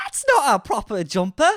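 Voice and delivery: very high, swooping put-on Geordie accent, glottal p. Repeating another speaker's example sentence in an accent lesson: attempted Geordie accent. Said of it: "often present in a Geordie accent".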